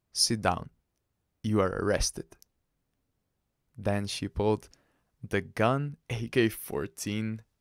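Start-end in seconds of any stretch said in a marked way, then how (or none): none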